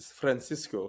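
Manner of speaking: thick Lebanese Arabic accent, flirty. Showing how to say the sandwich name right: lebanese accent. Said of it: "Lebanese accent".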